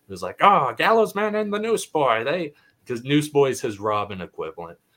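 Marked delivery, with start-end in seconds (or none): 0.4-2.5 put-on old-time radio announcer voice, much higher, slower. Describing a superhero story's world, 1940s radio announcer voice. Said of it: "you have like a 1940s radio announcer".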